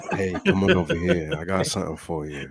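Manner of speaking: low, creaky, sultry alluring voice. Acting out luring people in alleys at night: put-on sultry luring voice. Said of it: "the sultry voice, you're just, like, luring people in the alleys at night".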